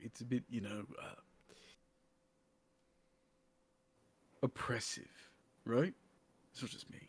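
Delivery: speaking low. Aside to the rest of the crew about an imposing place, lowered voice. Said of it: "I'm lowering my voice to the rest".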